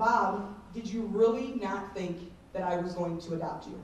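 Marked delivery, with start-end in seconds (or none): none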